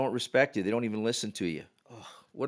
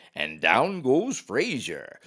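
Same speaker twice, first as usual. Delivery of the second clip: swooping big-fight sports announcer voice. Retelling the play-by-play guy's call after a near miss: Howard Cosell voice. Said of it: "in his very best Howard Cosell voice".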